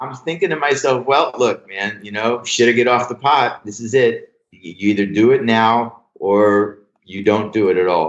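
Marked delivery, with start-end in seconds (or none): none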